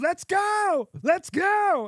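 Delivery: acted, very slow, very high, drawn-out hollering. Telling a story about an impatient bandmate waiting through a delay, you act out his words, retelling a yell. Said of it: "he's yelling".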